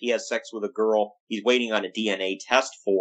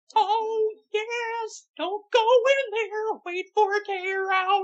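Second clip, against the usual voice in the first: very high, squeaky, creepy cartoon mouse voice. Talking about a wrestling show, speaker does a Paul Bearer impression. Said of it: "You sound like you're doing a really horrible Mickey Mouse".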